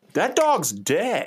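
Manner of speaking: shrill, very high shout. Recounting a crowd murmuring at a man with a dog, the speaker is retelling a yell from the crowd. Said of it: "someone just yells out".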